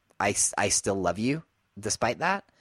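ordinary talk, nothing marked

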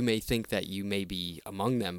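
ordinary talk

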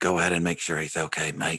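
soft half-whispered word. Urging a companion to go check on a crying man: quiet half-whisper. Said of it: "I whisper real quietly to Peter".

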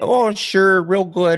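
put-on full-on Wisconsin accent. Imitating a woman who went on all the news shows after scraping her knee, total Wisconsin accent. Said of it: "She had this like total Wisconsin accent".

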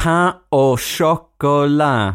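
slow, careful, overpronounced, overenunciated. Demonstrating how to say a French order with confidence, slow and overpronounced. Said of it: "take it slowly and overpronounce it".

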